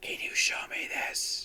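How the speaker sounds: breathy, all-air, hushed, whispery alien voice. Describing how the Ice Warriors talk: whispery Ice Warrior voice. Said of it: "they speak in a very whispery voice".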